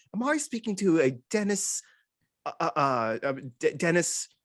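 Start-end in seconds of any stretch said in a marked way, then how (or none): 0.2-1.9 casual, put-on British accent. Retelling a phone call, voicing the caller in a random British accent. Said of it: "And it's just random British accent".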